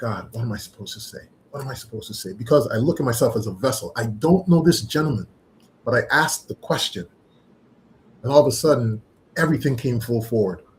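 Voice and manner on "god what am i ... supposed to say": hushed, barely audible whisper. Retelling what was whispered to oneself in the moment: retelling a whisper. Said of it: "I had to whisper to myself".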